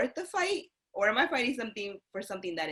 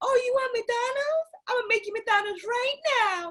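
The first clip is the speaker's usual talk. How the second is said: very high, loud motherly voice; 5 dB louder than usual. Retelling what mom said about homemade McDonald's: imitating mom. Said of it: "my mom would be like".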